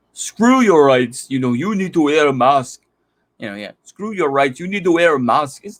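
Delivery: fake, bad Austrian accent drifting into Indian. Mocking Arnold on masks and rights, in a bad Arnold Austrian-accent impression. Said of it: "That sounds more Indian than Austrian".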